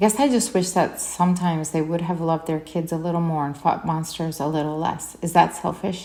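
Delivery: ordinary delivery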